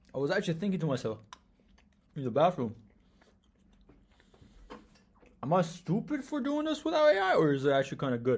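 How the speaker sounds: talking with mouth full. Back from a break, thinking aloud while talking with mouth full. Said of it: "I'm speaking with my mouth filled with food".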